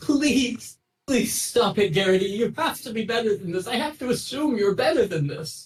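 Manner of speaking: high, pleading, begging voice. Voicing a librarian begging a book-stealing creature: begging librarian voice. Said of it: "begging. She's like".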